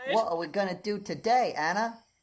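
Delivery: put-on loud, high British accent. Playing Thomas, talking to a scene partner, Thomas voice with British accent. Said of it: "Thomas sounds mysteriously like [name] with a British accent".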